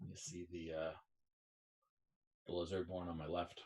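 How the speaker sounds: discreet, hushed half-whisper. Voicing a character speaking to another after the ceremony: half-whispering. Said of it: "whispers to you".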